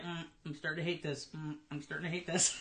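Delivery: low, soft, fed-up, frustrated mutter. Retelling own first reaction to a tricky yarn: imitating own frustrated muttering. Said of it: "You sounded frustrated".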